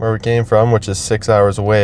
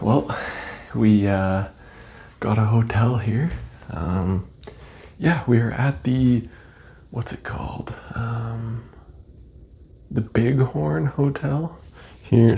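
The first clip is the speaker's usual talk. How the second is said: speaking in a whisper, quieter; 8 dB quieter than usual. Describing the hotel just reached on a road trip: whispering. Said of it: "I'm just trying to whisper".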